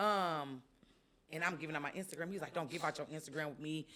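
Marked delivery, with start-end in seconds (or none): 2.5-3.9 cross, offended, indignant, angry delivery. Retelling what a man said before he stormed off: imitating an angry man. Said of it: "just stormed off".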